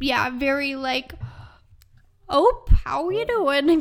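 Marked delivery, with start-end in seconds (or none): 2.3-3.8 Minnesota Midwestern accent. Describing a character's voice in the film, in a minnesota midwestern accent. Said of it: "Kind of like that kind of voice".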